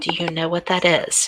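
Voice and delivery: soft, secretive whisper. Narrating a game scene, speaking as Anne to him: whispered. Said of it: "she whispers".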